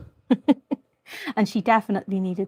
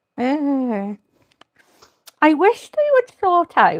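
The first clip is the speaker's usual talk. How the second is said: muffled, raised voice, words obstructed in the mouth; 6 semitones higher, 8 dB louder than usual. Speaker adding cadmium yellow paint, talking with a brush in mouth. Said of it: "I'm talking with a brush in my mouth".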